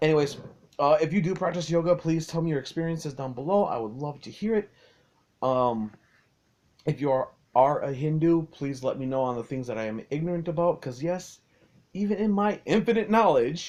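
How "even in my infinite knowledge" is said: tongue-in-cheek sarcastic delivery, pitched up. Asking viewers to correct mistakes about Hinduism: sarcastic.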